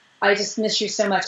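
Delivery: ordinary delivery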